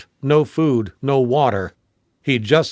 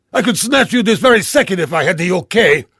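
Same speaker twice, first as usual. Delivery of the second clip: furious, angry, pitched-up yell; 6 semitones higher, 4 dB louder than usual. Reading a character yelling into the phone after being challenged, angry yelling. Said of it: "Brule yelled into the phone".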